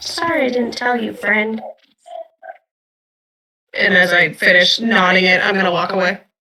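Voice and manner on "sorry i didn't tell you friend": soft, hushed half-whisper with no voice. Tying a gift around a friend's arm in character, half-whispering. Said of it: "I'm just gonna whisper so he can hear me".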